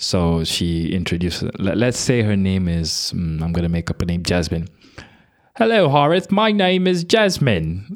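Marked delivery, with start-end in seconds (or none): 5.5-8.0 very high woman's voice, put-on British accent. Retelling how a classmate first introduced herself: imitating a put-on British accent. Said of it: "imagine that accent, but a woman's voice".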